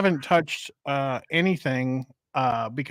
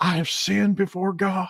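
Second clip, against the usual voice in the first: put-on crying preacher voice; 5 semitones higher than usual. Trying to recall which preacher made a confession, act it out, imitating Jimmy Swaggart crying. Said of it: "and he he was crying".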